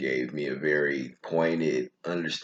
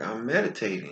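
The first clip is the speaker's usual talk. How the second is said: put-on small, pitched-up voice of a seven-year-old; 8 semitones higher than usual. Recalling answering her as a seven-year-old: little seven-year-old voice. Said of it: "with my little seven year old voice".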